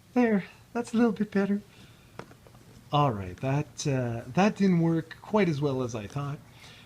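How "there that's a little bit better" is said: high, quick, rushed feminine voice. Retrying the character voice after deciding it should sound more feminine: more feminine Natasha Romanoff voice. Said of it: "I need to be more feminine".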